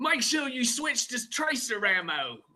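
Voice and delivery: very high, very slow, drawn-out cartoon voice. Recalling a toy's voice line heard as a kid: Ripper voice. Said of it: "I can still hear him say".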